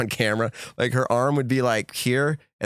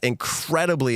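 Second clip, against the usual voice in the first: heavy stress on "incredibly"; 2 semitones higher than usual. Describing her reaction to seeing a player tee off, stressing "incredibly". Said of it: "I want to say it with emphasis".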